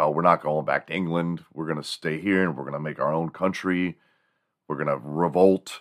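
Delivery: ordinary talk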